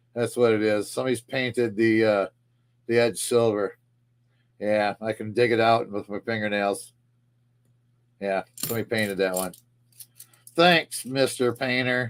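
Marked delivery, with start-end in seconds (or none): 10.5-12.1 dry, sarcastic, mock-grateful tone. Finding a coin whose edge someone painted silver: sarcastic. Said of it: "Did you hear the sarcasm in my voice there?".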